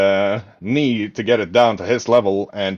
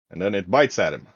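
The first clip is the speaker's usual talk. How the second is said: ordinary talk, nothing marked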